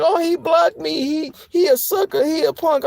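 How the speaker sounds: acted, very high, weepy, drawn-out crying whine. Retelling how blocked people complained online: imitating someone crying. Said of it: "started crying, like".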